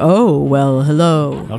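very deep narrator impression. Describing the Dateline narrator's voice: Keith Morrison voice. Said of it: "He has this very deep voice, like".

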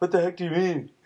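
put-on teenage way of speaking. Rephrasing a co-host's question, saying it in teenage dialect. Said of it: "let me say it in teenage dialect".

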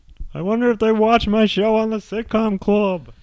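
badly done voice, shrill, very high and loud. Doing a bad Ray Romano impression, then apologizing for it. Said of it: "that's a bad Ray".

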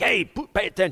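acted, mock-rude, brusque, demanding tone. Illustrating the rude way of asking God for attention, mock-rude demanding tone. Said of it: "in the rude kind of way, like".

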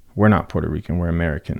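ordinary talk, nothing marked

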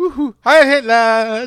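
overjoyed, gleeful cheer. Retelling a movie scene where a villain walks in, imitating an overjoyed character. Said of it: "like the happiest Nazi".

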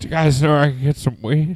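put-on sore-mouth talking. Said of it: "visibly in pain".

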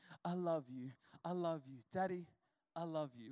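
soft, sweet, hushed voice. Retelling how a daughter ran in saying she loves her dad: imitating daughter's sweet soft voice. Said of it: "she's got this real sweet, soft".

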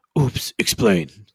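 booming, deep, very loud put-on voice. Recapping a show segment, quoting the voice that comes in, deep voice. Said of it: "the deep voice comes in and he goes".

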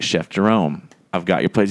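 ordinary delivery

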